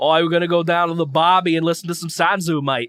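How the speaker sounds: put-on Australian accent and Australian-style pronunciation. Asked to pronounce a band name like an Australian: Australian accent. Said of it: "Pronounce it like an Australian would".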